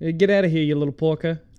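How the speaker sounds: put-on loud, high-pitched, belted-out Jersey accent. Retelling a documentary, quoting Chuck E. Cheese on stage in a Jersey accent. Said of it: "I can't do a Jersey accent".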